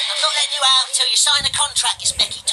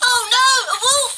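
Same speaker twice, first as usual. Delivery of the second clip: put-on very high, girlish, girly cry; 10 semitones higher than usual. Narrator tells a parody fairy tale, voicing the heroine spotting a wolf, in a girly voice. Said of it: "She cried in her girly voice".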